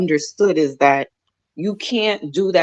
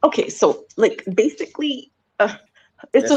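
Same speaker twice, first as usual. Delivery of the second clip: high-pitched, put-on little girl voice; 5 semitones higher than usual.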